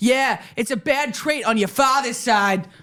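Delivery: mock yelled, jeering jab. Retelling a mother heckling during a show: imitating a yell. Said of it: "my mom yells out".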